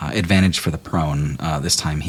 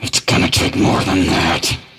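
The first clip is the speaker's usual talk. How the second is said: loud, forced out through gritted teeth; 2 semitones higher, 6 dB louder than usual. Narrating a tabletop game, voicing her response to the attack through gritted teeth. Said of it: "say through gritted teeth".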